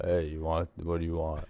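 super deep, bassy, low voice. Retelling how a vape store worker talks: imitating a super deep voice. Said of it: "Is it, like, super deep?".

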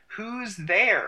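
demanding stage whisper. Narrator reads your character hearing rustling in the bushes and demanding, loud whisper. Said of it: "You demand in a loud whisper".

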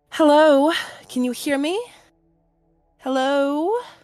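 high put-on woman's voice. Voicing a voice heard from a stone pulled out of a bag, female voice. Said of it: "this female voice going".

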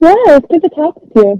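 muffled, smothered, slightly high voice. Guest saying goodbye at the end of an interview: muffled voice. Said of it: "you just got really muffled for a second".

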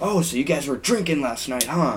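acted, snide, smug, knowing, accusing dad voice. Retelling being caught drinking by a friend's dad: imitating a dad's accusing voice. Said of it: "making my dad sound like a dick".

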